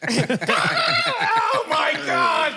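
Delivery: high, loud panicked shriek.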